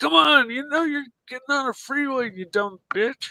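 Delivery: mock very high, bloody-murder screaming. Retelling how a friend talks at other drivers: imitating a friend screaming. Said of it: "he's just screaming bloody murder".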